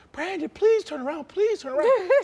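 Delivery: shrill, desperate, very high, loud pleading scream. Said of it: "she was just screaming my name".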